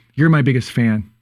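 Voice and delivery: plain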